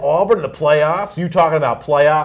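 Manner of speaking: ordinary talk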